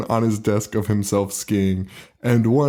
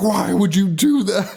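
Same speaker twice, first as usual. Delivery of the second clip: put-on, high, shrill, top-of-lungs screaming; 10 semitones higher than usual. Recalling a scene, acting out Carl screaming at the top of his lungs. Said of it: "screaming at the top of his lungs".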